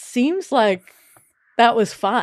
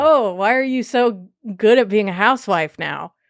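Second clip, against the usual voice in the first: plain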